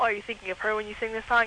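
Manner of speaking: usual speaking voice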